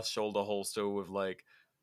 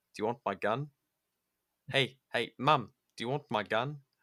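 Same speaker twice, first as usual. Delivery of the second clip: bad, dumb, fake New Zealand accent. Retelling what he'd always say to his mum when leaving, in a dumb quasi-Kiwi accent. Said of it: "in that fucking like dumb quasi uh Kiwi accent".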